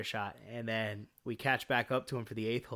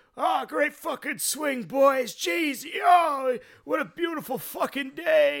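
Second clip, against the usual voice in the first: put-on very high, loud, drawn-out drunk drawl; 8 dB louder than usual. Retelling what a drunk golfer said while watching a swing: imitating a drunk man. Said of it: "And he clearly drunk".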